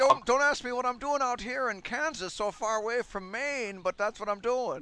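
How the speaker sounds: put-on very loud, very high New England accent. Playing a character putting up travelers heading to california, new england accent. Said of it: "It is a New England accent".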